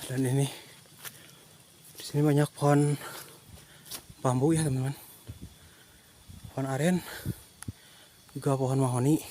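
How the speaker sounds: out of breath, panting while talking. Walking a long path while talking to viewers, out of breath. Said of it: "Ngomongnya saya sambil ngos-ngosan ini".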